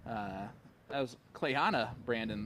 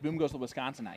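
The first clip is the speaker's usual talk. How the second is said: normal talking voice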